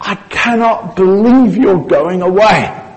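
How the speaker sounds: put-on stunned, heartbroken, slow, devastated disbelief. Acting out the disciple's reaction to hearing Jesus is going away: acting out devastated Simon Peter. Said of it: "if you just read it like Peter must have heard it".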